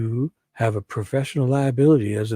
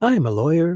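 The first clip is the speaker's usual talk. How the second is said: voice pitched slightly higher; 5 semitones higher than usual. Voicing a woman's answer in a retold conversation, slightly higher voice. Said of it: "I'll just go a little bit higher".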